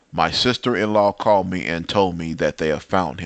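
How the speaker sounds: ordinary talk, nothing marked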